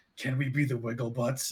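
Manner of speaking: barely-there, very quiet, very low, deep murmur. As the group walks off, a character speaks in Tycreel's voice, very quietly. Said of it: "[name] says very quietly".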